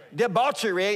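loud British accent on debauchery. Saying one word aloud on request: said loudly in British accent. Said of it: "say debauchery for me, please, real loud?".

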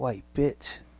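very quiet, hushed half-whisper under the breath. Retelling a half-whispered insult said coming down the steps: half-whispering under breath. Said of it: "under my breath, I whispered".

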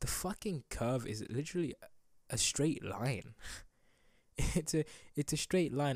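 talking with words broken up by laughter. Speaker addressing the audience, laughing while talking. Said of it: "I'm sorry for laughing".

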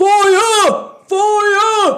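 very loud, very high, drawn-out booming bellow. Narrating the alarm in town to the players: Sharktooth's booming shout. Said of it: "you hear Sharktooth's voice booming".

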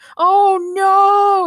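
shrill, very high, loud yell. The inspector accidentally sets off his jetpack and flies far away, yelling. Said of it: "Inspector Gadget yelled".

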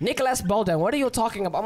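put-on Indian accent, quick, words tumbling. Retelling how a man called him by the wrong name, indian accent impression. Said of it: "So now he Indian with that accent".

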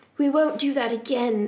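ordinary delivery, nothing marked

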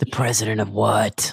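put-on whispery antihero voice. Imitating the eye-patched antihero's line from the movie: whispering Snake Plissken impression. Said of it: "and whispering".

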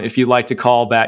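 ordinary delivery

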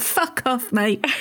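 put-on London Cockney accent. Asking how the other speaker answered a fake Londoner, in a Cockney accent. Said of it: "Were you like in your Cockney accent?".

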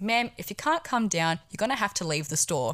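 serious, official authority voice. Retelling a store exchange with a raging customer, serious authority voice. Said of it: "in a serious authority voice".

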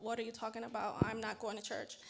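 ordinary delivery

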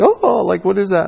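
high, incredulous, scoffing reaction.

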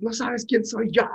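mock very high, rude, shrill yelling. Retelling how a rude customer shouted while throwing candy: imitating a customer shouting. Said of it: "empezó a gritar así de".

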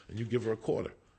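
ordinary delivery

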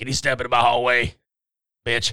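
mock chain-smoker voice. Acting out a scene of a character he calls a badass, in a heavy smoker's voice. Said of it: "you sound like you got some throat cancer problems".

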